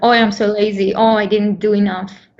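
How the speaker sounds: plain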